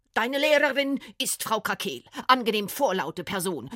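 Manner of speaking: loud, booming, thundering voice. A woman leads Frieda to a classroom door and names her teacher: booming. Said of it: "dröhnte die dicke Frau".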